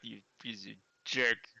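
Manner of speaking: low grumble muttered under the breath. Glaring at another character, muttering an insult under the breath. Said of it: "just mutter under my breath".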